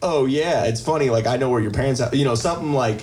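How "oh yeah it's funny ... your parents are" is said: plain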